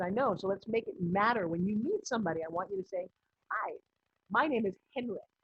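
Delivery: ordinary delivery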